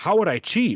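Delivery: evasive, deflecting tone with a weird counter-question feel. Imitating a streamer's answer when called out: imitating someone deflecting. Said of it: "he just deflects and he kinda ch-".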